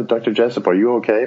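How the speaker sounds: ordinary delivery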